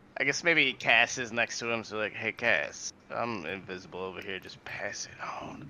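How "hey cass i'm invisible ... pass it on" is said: very quiet, slow, barely-there hushed murmur. Voicing an invisible character passing a message to Cass: very quiet hushed voice. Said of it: "But very quietly, like, a little, a little hushed".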